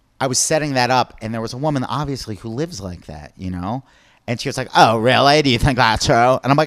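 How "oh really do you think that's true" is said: put-on woman's voice, louder. Retelling a woman's question during a stand-up bit: impersonating a woman in the audience. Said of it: "do an impersonation of her again".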